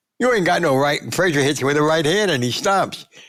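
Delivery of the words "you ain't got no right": put-on light, mild, half-voiced yell. Retelling a later fight where one boxer yells at his opponent: imitating Ali yelling. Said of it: "Now he yells at Frazier".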